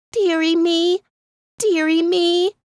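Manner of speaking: sad, high, small piping voice. Narrating a story, voice the lonesome little goldfinch in a sad little piping voice. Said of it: "I heard the saddest little voice pipe out".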